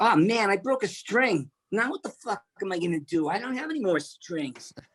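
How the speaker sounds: whiny nasal complaining. Retelling complaints from years of playing rock music: imitating own whiny nasal complaining. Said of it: "I was whiny, nasally, and complainy".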